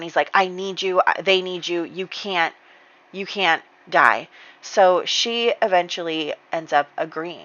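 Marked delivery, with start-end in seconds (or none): 0.3-4.3 acted, crying, tearful, broken-down voice. Retelling a story, voicing a husband pleading with his wife: imitating someone crying. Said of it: "crying and he's, like, breaking down".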